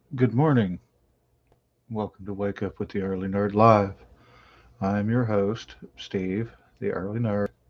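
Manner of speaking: quiet, low talking. Greeting viewers early in the morning so no one wakes: talking quietly. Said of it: "I'm talking quietly".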